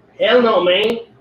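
best attempt at a Mexican Spanish-tinged English accent. Responding to a claim he has just read out, doing a Chicano accent. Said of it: "do my best chicago chicano accent".

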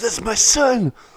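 put-on shrill, very high screaming cry. Recounting a Sons of Anarchy scene where a father's son is taken, retelling a scream. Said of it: "he screams".

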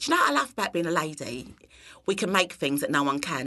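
put-on broad Cockney accent, laid on thick. Retelling what her friend Lulu said among friends in England, imitating Lulu's Cockney accent. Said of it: "in a very Cockney accent".

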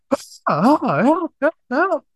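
shrieking, very high-pitched scream. Speaker acts out a man running away and screaming for help, retelling a scream for help. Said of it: "he started screaming like".

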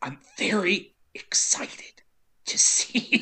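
weird, halting, breathy half-whisper. Imitating how a Twilight lead talks, in a weird halting voice. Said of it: "she talks in this weird, halting voice".

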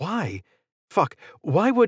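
high, shaky, trembling voice, thick with tension. A narrator reads a woman's line as she stands beside Israel; shaky, tense voice. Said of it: "Her voice was shaky and thick with tension".

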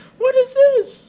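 shrill, very high-pitched, very loud voice. Retelling a story, voicing a person in a furry suit talking to a soldier, high-pitched voice. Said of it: "a high-pitched voice".

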